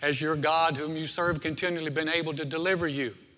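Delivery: ordinary talk, nothing marked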